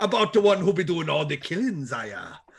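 put-on Irish accent drifting toward a Jamaican accent. Comparing a show's accent to King Willie from Predator Two: King Willie voice. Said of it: "you're becoming King Willie from Predator Two".

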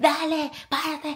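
high, loud mock coach-style yelling.

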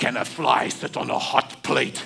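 deliberate, slow, creaky, rough, rasping preacher voice, drawn out. Retelling how an evangelist answered a question, in Reinhard Bonnke voice. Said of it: "Reinhard had this voice".

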